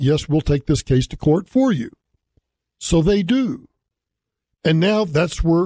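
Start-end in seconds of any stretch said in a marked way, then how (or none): none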